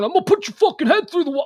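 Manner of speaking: mock scary tough-guy voice, loud, fast, menacing. Describing a clip where shoppers turn on a man: imitating a scary threatening dude. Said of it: "a very scary individual dude starts going".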